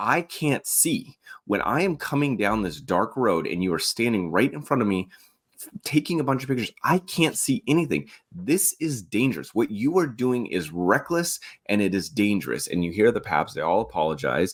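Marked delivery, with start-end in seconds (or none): 0.0-12.7 mild, reined-in, half-shouted yell. Retelling a driver getting out to confront photographers: imitating someone yelling. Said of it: "yelling at the guy".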